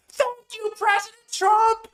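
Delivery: very loud, very high-pitched cheering scream. Retelling watching from the back auditorium: imitating own past scream. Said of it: "I'm screaming it".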